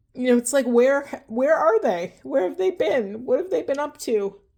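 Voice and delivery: emotional, welling-up voice. Explaining a letter-writing exercise to an inner child, getting emotional. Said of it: "I'm getting emotional".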